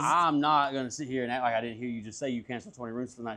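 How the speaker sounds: usual speaking voice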